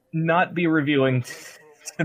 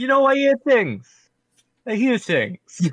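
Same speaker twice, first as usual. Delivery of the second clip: put-on pitched-up New York accent; 8 semitones higher, 3 dB louder than usual. Quoting Raiden's lines, in a New York accent. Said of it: "Raiden is for some reason doing like a New York accent".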